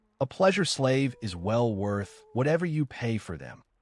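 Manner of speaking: normal talking voice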